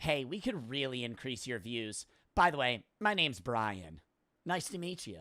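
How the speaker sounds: mock, overly courteous, fake-polite, salesy tone. Imitating senders of formal emails he gets: mocking formal email politeness. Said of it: "I get emails like this where they're like".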